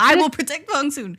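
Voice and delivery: screaming high at the top of lungs. Retelling a drama scene set in a hospital: imitating screaming at top of lungs. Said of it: "scream at the top of your lungs".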